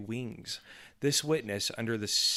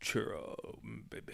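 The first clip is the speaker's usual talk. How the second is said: breathy, seductive, romantic tone; 9 dB quieter than usual. Showing the voice used when wanting the wife's attention: romantic voice. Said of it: "That's my romantic voice".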